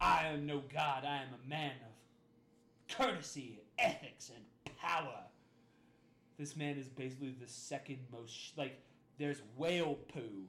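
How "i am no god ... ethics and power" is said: put-on self-serving voice, much slower. Retelling a story, quoting Patrolman Buford T. Justice's own words: self-serving Buford T. Justice quote. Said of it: "you just hear this man self-servingly".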